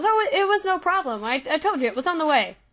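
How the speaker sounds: flustered, hurried stumbling. Voicing a character handing over a package, in an embarrassed little rush. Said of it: "in a embarrassed little rush goes".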